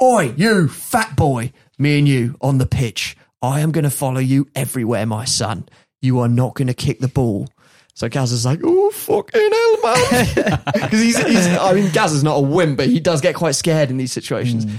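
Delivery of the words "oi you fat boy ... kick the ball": mock harsh barking delivery. Retelling how a player confronted a rival in the tunnel before a game, retelling a barked threat. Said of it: "just barks".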